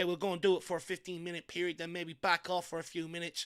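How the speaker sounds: plain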